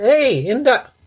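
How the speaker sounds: put-on high, calling bellow. A parent recounts calling upstairs to a child who won't come, retelling a bellow. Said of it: "I bellowed at him".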